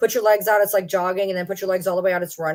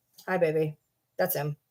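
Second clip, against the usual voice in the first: ordinary delivery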